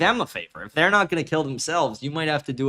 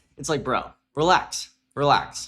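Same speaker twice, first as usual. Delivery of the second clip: usual speaking voice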